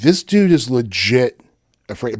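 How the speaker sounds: ordinary talk, nothing marked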